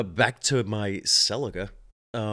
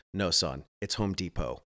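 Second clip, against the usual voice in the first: instant unhesitating delivery, lower pitch; 4 semitones lower, 4 dB quieter than usual. Retelling his dad correcting his pronunciation of Home Depot, answering without hesitation. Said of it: "my dad, without any kind of like hesitation, says".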